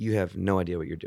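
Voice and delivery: ordinary delivery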